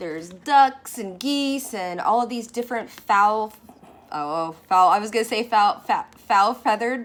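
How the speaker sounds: very loud talking, almost yelled.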